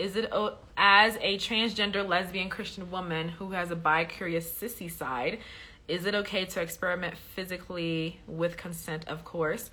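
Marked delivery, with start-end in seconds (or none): none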